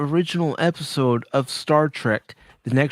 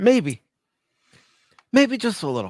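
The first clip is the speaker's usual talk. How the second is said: tearful, choked-up, pitched-up voice; 6 semitones higher than usual. Admitting to crying a little when asked: tearful. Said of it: "Are you crying?".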